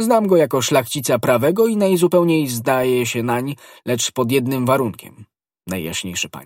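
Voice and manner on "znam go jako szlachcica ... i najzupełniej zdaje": usual speaking voice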